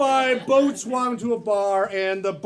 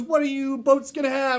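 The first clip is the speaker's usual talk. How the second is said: plain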